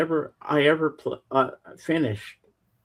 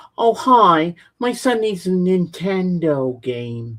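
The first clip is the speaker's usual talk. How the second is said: very slow, irritating, annoying drawl; 4 semitones higher, 4 dB louder than usual. Retelling a woman who came into the video store: imitating an annoying voice. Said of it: "She had the most annoying voice".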